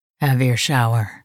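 deep, gravelly voice. A man speaks to a woman as they pull apart, deep, gravelly voice. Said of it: "he said in that deep, gravelly voice".

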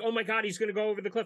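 put-on dramatic panic. Describing a scene that is not played tense: mock alarmed tension. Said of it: "Spielberg doesn't play it like".

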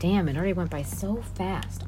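usual speaking voice

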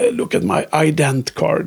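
very slow, drawn-out, shaky, trembling voice. Retelling a game scene where a very sick character speaks, mock-shaky Bok voice. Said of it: "med så här darr på rösten".

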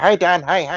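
little, squeaky, very high voice. Imitating a comedic actor friend who has a little high voice. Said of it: "a little high voice".

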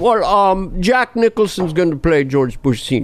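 ordinary delivery

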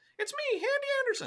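very high, squeaky little cartoon mouse voice. Before reading a Yeats poem, the speaker tries out a Hadi Anderson voice. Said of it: "It's just Mickey Mouse".

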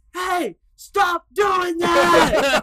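high, loud, slow, drawn-out, fed-up yell.

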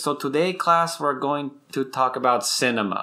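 put-on abrupt switch into lecturing American accent. Imitating a class lecturer's line: imitating a professor switching to American accent. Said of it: "it just switch to American".

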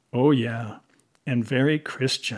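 plain

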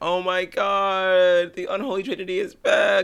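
very high, slow, gushing fan squeal.

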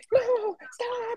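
put-on thin, squeaky old voice, way up high. Retelling yelling at a friend who crashed his PC; imitating his old squeaky voice. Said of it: "Let me do my old voice".

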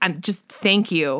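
put-on choked-up, emotional speech. Speaker recounting a man thanking them, imitating choked-up speech. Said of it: "starting to like get choked up".

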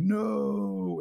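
acted-out shout. Retelling a character falling into a creature's mouth, retelling a shout. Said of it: "And he's shouting like".

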